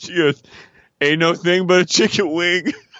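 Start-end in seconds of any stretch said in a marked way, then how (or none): 1.0-2.7 put-on drunk voice. Recapping a show scene, the speaker is imitating Tiffany's drunk speech. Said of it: "who's drunk eating".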